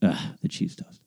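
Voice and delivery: muttered, hushed, breathy half-whisper under the breath. Retelling what she said back when they ordered, mumbled. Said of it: "Like mumbled and walked off".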